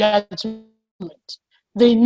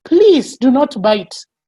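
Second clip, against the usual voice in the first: acted shouting voice; 2 semitones higher, 4 dB louder than usual. Retelling running upstairs while calling to the children: imitating own past shouting. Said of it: "I was going upstairs and shouting".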